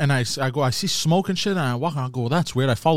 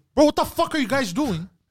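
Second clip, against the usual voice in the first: mock, very high-pitched, raised yell; 10 semitones higher than usual. Telling of seeing the fire extinguishers at the airport parking, the speaker is retelling own yelling. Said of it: "I start yelling".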